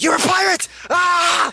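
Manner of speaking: put-on yelling hero voice. Imitating Ban yelling at everyone: imitating Ban yelling. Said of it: "Bond just yell at everyone".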